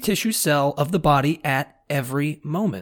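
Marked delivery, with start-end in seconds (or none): none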